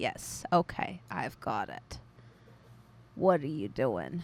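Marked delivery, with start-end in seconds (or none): 3.1-4.2 put-on acted old-lady character voice. Voicing the character after recalling her voice: older lady voice. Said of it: "almost like an old version of Lulu".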